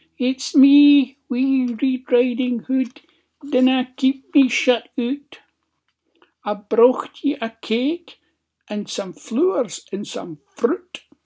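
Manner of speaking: tiny, loud, squeaky false voice. Reading a story, the wolf at Granny's door speaks in a wee squeaky voice. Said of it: "The wolf put on a wee squeaky voice".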